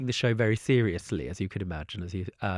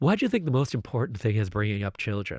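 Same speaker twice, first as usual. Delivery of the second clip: clumsy, bad, put-on American accent. Retelling rude Americans speaking to the Queen Mother at dinner: bad American accent. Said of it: "bad accent, we get the point".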